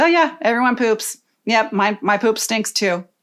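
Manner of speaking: ordinary talk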